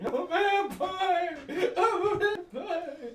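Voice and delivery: very high, shrill, very slow, drawn-out scream. Recapping the story as Mike runs around: retelling a scream. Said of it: "runs around screaming".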